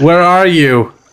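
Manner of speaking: flat, dispassionate delivery. Redoing a film line as asked, flat dispassionate delivery. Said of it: "try to say it more dispassionately, like you don't care at all".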